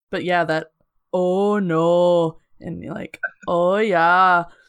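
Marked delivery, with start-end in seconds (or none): 1.1-4.4 strong Minnesota accent. Speaker shows how people talk in Minnesota: very Minnesotan accent. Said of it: "that very Minnesotan".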